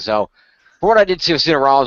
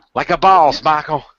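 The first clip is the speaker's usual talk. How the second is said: wrestling commentator calling ringside, pitched up; 5 semitones higher, 3 dB louder than usual. Calling a wrestling move as it happens, JBL impression. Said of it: "That sounds so much like J B L".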